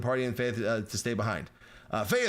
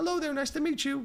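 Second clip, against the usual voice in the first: very high, robotic voice. Showing how to voice a story character, doing Bebo's high robotic voice. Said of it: "in like this really high pitched, like almost robot sounding voice".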